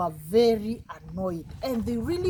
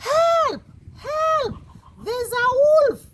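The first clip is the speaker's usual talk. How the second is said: shrill, high, drawn-out scream at top of lungs; 7 dB louder than usual. Telling a story, voicing the boy calling the villagers: screaming at the top of his voice. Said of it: "started screaming at the top of his voice".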